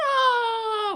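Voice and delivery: high, loud yell of no, falling away.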